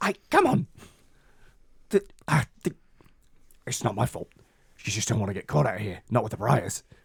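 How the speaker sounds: tiny, small, little voice. A game master voices a figure pounced on by a wolf: little voice. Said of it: "a little voice comes out of the darkness".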